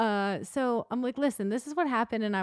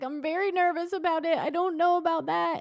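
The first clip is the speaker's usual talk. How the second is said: high, tearful, pleading, play-acted crying little-kid voice; 7 semitones higher than usual. Retelling a haircut outing, imitating Asher crying. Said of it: "And he starts crying".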